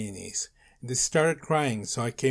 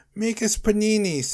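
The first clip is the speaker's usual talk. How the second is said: very high-pitched sobbing, crying yell; 9 semitones higher, 4 dB louder than usual. Narrator reads a character appearing in the doorway, yelling while crying. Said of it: "he yelled, still crying".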